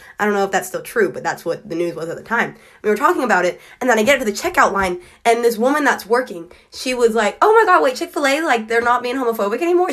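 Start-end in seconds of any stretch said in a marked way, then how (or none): 7.4-9.9 put-on very strong Southern accent, pitched up. Retelling a checkout worker's reaction to the news, in a strong southern accent. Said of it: "She had a very strong southern accent".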